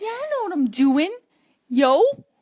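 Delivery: put-on New Jersey butler accent. Asked to do a New Jersey butler, improvising in a New Jersey butler accent. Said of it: "do New Jersey. New Jersey butler".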